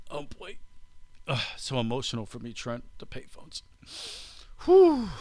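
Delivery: fake teary, choked-up, overcome sighing. Reading news of the last payphone's removal, mock emotional and choked up. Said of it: "little emotional".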